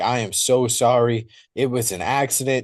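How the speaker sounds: mock desperate, pleading, begging tone. Retelling a story where Brian apologizes to Bigfoot, imitating desperate apology. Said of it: "apologizing profusely and just begging for forgiveness".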